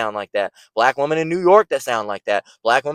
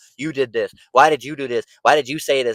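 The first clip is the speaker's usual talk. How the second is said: mock, put-on accusing female voice.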